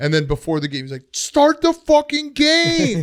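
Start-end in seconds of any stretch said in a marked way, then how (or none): 1.1-3.0 very high, stretched-out screaming. Comparing the broadcast to a dad yelling from the other room, imitating a screaming dad. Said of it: "he was just screaming".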